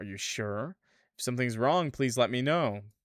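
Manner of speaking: ordinary talk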